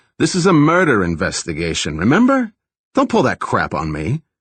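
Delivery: brash, obnoxious put-on New York accent, swooping pitch. Retelling his reply to a man demanding to attend all interviews, put-on obnoxious new york tone. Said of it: "I replied in my best New York obnoxious tone".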